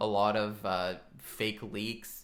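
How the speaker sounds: ordinary delivery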